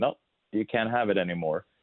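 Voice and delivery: ordinary talk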